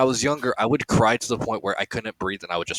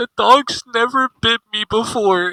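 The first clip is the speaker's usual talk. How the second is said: imitated crying, higher and louder; 12 semitones higher, 6 dB louder than usual. Retelling what a drunk brother said while crying over the dog: imitating someone crying. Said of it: "my brother just looked at the dog and started crying".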